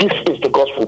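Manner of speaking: ordinary talk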